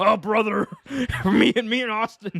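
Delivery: wrestling ring promo style. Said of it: "Hulk Hogan catfishing me as Vince McMahon".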